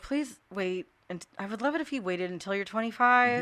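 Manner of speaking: plain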